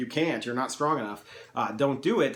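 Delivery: plain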